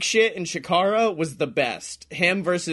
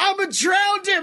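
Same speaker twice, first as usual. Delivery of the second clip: put-on wild, shrill, very high-pitched scream; 14 semitones higher than usual. Retelling a wrestling match where one wrestler screams: retelling a scream. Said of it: "he just screams".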